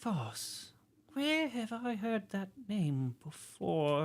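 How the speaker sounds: muttering under the breath. Narrating a character trying to recall a name, mumbling to himself. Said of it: "he starts mumbling to himself".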